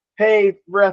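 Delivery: high, mock pleading voice. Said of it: "Instead of him going like".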